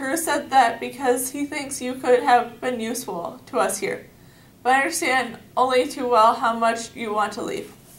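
ordinary delivery

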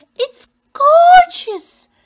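shrill, very loud, high gasping outcry. A narrator reading Pansy's line to Walter, her host: gasped. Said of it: "gasped Pansy".

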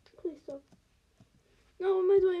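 frightened. A streamer playing a game with monsters, scared. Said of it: "I'm so scared".

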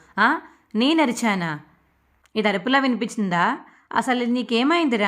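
ordinary delivery

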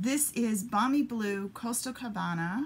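said with a flourish, sing-song.

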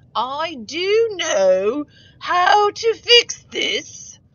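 very loud, swooping, horrible put-on British accent. Trying to fix a line in the picture, the speaker uses a horrible British accent. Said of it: "That's my horrible British accent".

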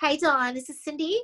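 put-on nasal voice. Showing off her impressions of people she knows, nasal Cindy impression. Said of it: "she's very nasal".

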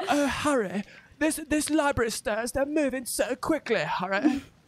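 squeaky, very high animated parody voice. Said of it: "You sound more like the, um, what is this, like, oh, what was that? The animation".

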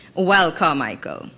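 ordinary delivery

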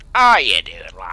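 mock cheeky matey voice, belted out loudly.

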